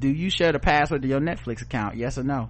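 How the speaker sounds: plain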